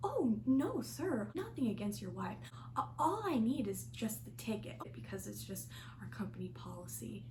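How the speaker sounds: acted honeyed, innocent, charming sing-song voice. Retelling a reply to a man about a ticket, put-on sweet innocent voice. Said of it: "I like put on my charming voice that just dripped with sweetness and innocence".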